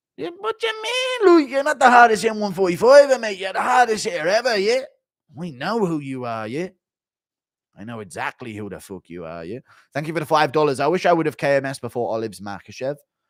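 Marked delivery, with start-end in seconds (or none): 0.2-9.6 high, animated, swooping sing-song voice. Compliment Stevens after he proclaims himself the real hardest hitter, as a Jolly McGregor impression. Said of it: "Impression of Jolly McGregor".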